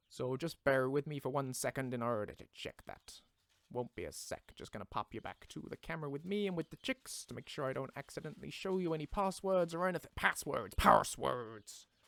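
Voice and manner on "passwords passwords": put-on pirate voice, lower. Joking about hidden passwords while talking like a pirate: put-on pirate voice. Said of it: "we are pirates now".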